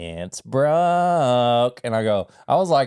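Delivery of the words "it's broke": mock startled, surprised, word stretched out. Retelling what a doctor said about an X-ray: imitating surprised doctor. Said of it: "like a surprise".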